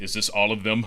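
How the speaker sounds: angry villain voice, like a hunting predator. Voicing a masked commander asking an officer: Kylo Ren voice. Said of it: "in his Kylo Ren voice".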